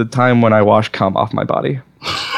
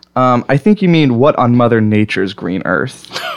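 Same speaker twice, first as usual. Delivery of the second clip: ordinary talk, nothing marked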